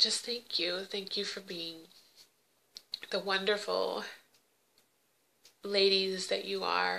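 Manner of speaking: tearful voice, crying while talking. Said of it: "bring you down by me crying".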